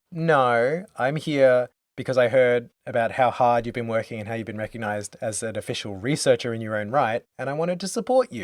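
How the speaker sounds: normal talking voice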